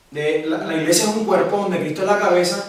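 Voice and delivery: ordinary delivery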